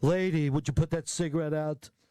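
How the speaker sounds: over-the-top, pushy, bossy, domineering voice.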